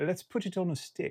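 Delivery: very bad put-on British accent, high. Speaker trying out a fragrance on a stick, worst British accent ever. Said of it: "that is the worst British accent you've ever heard".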